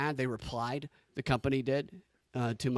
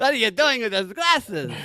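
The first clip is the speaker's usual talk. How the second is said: Yiddish-influenced accent; 9 semitones higher, 9 dB louder than usual.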